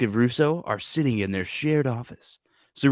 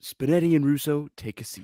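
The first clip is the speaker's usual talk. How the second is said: usual speaking voice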